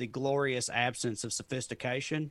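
ordinary talk

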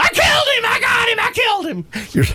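put-on, shrill, piercing, very high scream. Speaker retells hearing a man screaming that he killed someone, retelling him screaming. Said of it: "And I hear him screaming".

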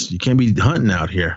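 normal talking voice

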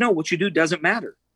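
mild, light, put-on Southern accent. Retelling what a grandmother told him: imitating grandma's southern accent. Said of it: "she had kind of a Southern accent".

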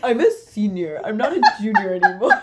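loud, laughing, cocky bragging tone. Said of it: "That is the energy it gave".

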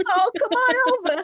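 very high, put-on old grandma voice. Trying out different voices with friends, now doing a grandma voice. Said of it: "That's the grandma voice".

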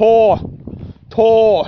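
put-on rural country accent, "Ty" said as "Tor". Retelling a man who, asked his name, answered: imitating Ty's country voice. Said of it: "that was his country voice".

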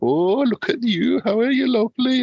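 very high, lingering, drawn-out kingly voice. Retelling how a co-host voiced King James the First: Alan Cumming voice. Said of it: "he did James the First, like Alan Cumming".

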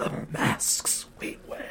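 eerie, hushed, breathy whispered creepy voice. Asked to read the stream's title, the speaker reads it in a creepy voice. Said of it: "can you read the title in a creepy voice?".

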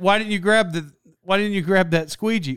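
normal talking voice

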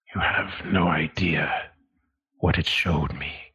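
low, guarded voice kept from being overheard. Narrator voices a man speaking so the guards can't overhear, in a low voice. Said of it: "says in a low voice that the guards aren't".

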